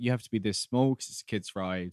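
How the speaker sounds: ordinary talk, nothing marked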